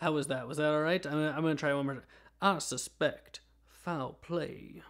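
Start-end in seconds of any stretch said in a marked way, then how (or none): 2.4-4.8 cartoonish, exaggerated, very slow, drawn-out Southern drawl. Trying a character's catchphrase a second time, Foghorn Leghorn voice. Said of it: "Kind of a foghorn leghorn voice".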